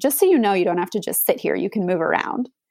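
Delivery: imitated snippy tone with attitude. Retelling what a rough midwife said on coming in: imitating a midwife with attitude. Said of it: "came in with a little bit of an attitude".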